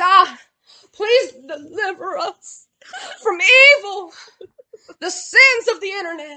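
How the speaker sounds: play-acted, high, drawn-out, near-tearful, on the verge of breaking. Acting out how a woman always sounds when she prays, imitating someone about to cry. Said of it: "she always sounds like she's about to cry when she prays".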